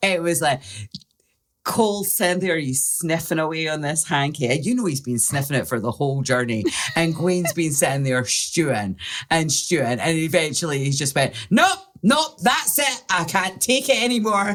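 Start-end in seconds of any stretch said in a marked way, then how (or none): 11.5-14.6 put-on very high, loud, exasperated blowup. Telling a story of a cab ride, acting out a companion's loud outburst. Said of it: "he very loudly in front of the whole cab".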